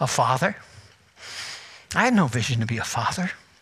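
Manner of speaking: emotional, low, soft choked-up voice. A preacher speaking to a room where two of his children sit, choked up. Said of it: "I'm only getting choked up".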